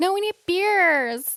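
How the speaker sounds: put-on very high, slow, cutesy little Canadian accent. Retelling a movie character's line about beers: cutest little Canadian accent. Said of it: "she says it in the cutest little Canadian accent".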